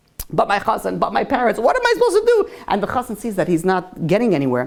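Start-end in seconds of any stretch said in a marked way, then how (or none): 0.3-2.6 put-on sobbing, tearful and helpless. Retelling a bride torn between groom and parents: imitating someone crying. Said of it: "She starts crying".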